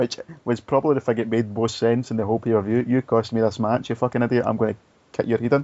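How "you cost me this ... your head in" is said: plain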